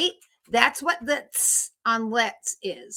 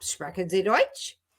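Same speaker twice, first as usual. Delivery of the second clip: Deutsch said with a rising tune; 4 semitones lower than usual. Showing that spoken German questions go up: rising question pitch on Deutsch. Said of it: "Questions go up".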